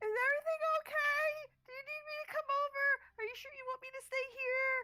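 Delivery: frantic, very high, loud, panicked worried voice. Voicing a character checking on Nyx after she turned blue, panicked. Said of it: "panicking a little bit more".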